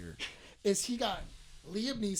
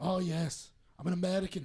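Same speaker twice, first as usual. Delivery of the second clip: put-on British accent. Imitating Jason Statham claiming to be American: Jason Statham impression. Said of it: "That was more Irish than anything".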